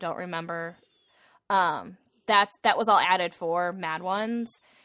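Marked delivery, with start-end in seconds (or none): 0.0-0.8 put-on soft delivery, quieter. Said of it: "really soft and she's like".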